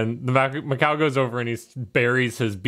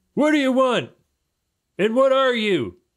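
put-on very high, cranky, grumpy old man voice; 13 semitones higher, 3 dB louder than usual. Playing the old man who opens the birdhouse door, old man bursting out. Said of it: "there's this old man bursting".

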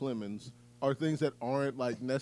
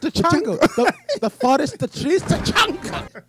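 put-on over-the-top German accent, higher and louder; 14 dB louder than usual. Repeating a mispronounced word for the other speaker: Jesse Plemons' over-the-top German accent. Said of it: "he was over the top German".

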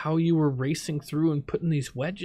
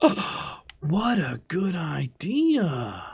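overplayed, exaggerated surprise, swooping; 2 semitones higher than usual. Reacting to a suggestion from the comments, with exaggerated surprise. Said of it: "You sound really surprised".

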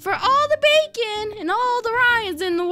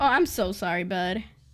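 insincere, sarcastic-sounding delivery, lower pitch; 14 semitones lower, 4 dB quieter than usual. Apologizing to a teammate for looting all the chests: insincere apology. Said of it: "That sounded really insincere".

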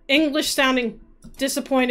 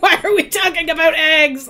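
very loud, pitched-up, aggressive fake-angry outburst; 5 semitones higher, 8 dB louder than usual. Asking the others a question about eggs: mock aggressive. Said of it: "Said aggressively".

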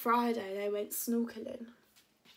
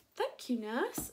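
ordinary delivery

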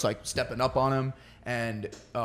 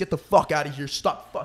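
mock furious screaming, loud; 2 semitones higher, 3 dB louder than usual. Retelling a fight with a roommate: retelling screaming at someone. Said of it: "I was screaming at my roommate's face".

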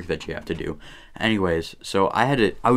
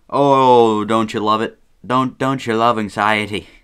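put-on Irish accent, louder; 2 semitones higher, 5 dB louder than usual. Host opening a video on their second channel, slipping into an Irish accent. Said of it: "I don't know why I went Irish there".

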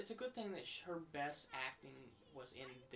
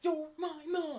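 very loud, very high-pitched yell; 14 semitones higher, 13 dB louder than usual. Repeating a line yelled while arguing with a mom on screen: reenacting own shouted argument line. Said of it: "I'm just yelling".

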